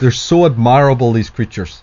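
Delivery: put-on condescending voice, mocking tone. Speaker acting out what a man said, mocking a condescending tone. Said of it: "he condescendingly says".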